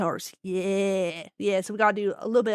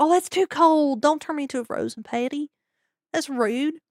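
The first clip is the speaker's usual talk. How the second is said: put-on slow, drawn-out, high-pitched Appalachian accent; 6 semitones higher than usual. Voicing the burger the speaker will eat, answering back in an Appalachian accent. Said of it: "that thing better not talk in an Appalachian accent".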